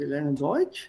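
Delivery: rising tune, pitch lifted on Deutsch. Explaining german question intonation: rising intonation on deutsch. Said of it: "you have to raise the intonation at the end, rising".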